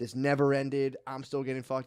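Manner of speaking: usual speaking voice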